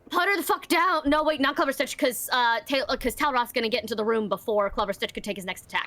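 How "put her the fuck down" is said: high-pitched shout in character voice. Playing a character who shouts at Clever Stitch during a fight: shouting. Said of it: "I'm going to shout at Clever Stitch".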